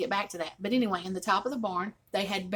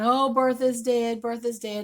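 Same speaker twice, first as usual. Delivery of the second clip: mock crying, tearful wailing like a child; 3 semitones higher, 4 dB louder than usual. Retelling how the children cried over the dead chicken: imitating crying children. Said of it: "they're crying".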